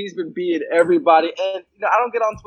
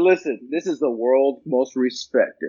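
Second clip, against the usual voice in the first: trailer announcer voice, much lower; 6 semitones lower than usual. Retelling a man's response to the speaker, in a movie trailer voice. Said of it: "He went into that voice".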